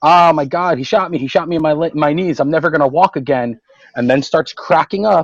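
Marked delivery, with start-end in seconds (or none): 0.0-3.6 mock scream, higher. Retelling a story where a man shot in the knee screams, retelling a scream. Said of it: "and he's screaming".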